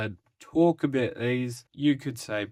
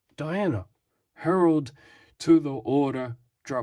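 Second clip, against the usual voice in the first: ordinary delivery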